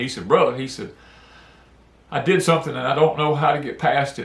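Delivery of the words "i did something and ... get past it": mock speech said through tears. Retelling a close friend's confession to God: imitating a friend crying. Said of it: "He was just crying".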